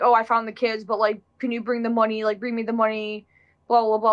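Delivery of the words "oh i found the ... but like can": ordinary delivery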